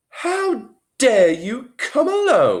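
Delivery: terrible, very high, swooping voice. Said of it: "said the witch in a terrible voice".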